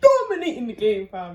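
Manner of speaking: very loud, booming, chest-out, boastful bravado. Boasting about being a chef, said with chest. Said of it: "Say that with chest".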